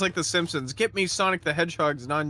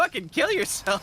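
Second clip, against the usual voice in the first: very high, pitched way up cartoon voice; 11 semitones higher than usual. Retelling how he did the Sonic voice to answer, Sonic the Hedgehog voice. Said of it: "he just did the Sonic voice and went".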